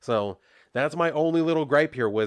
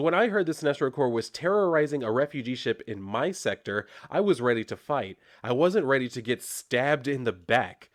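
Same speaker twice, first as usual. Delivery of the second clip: ordinary talk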